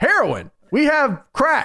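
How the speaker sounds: put-on very high, very slow, drawn-out swooping shout. Speaker retells him and Johnny trolling a paranoid friend, retelling yelling out. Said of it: "we just start yelling out like".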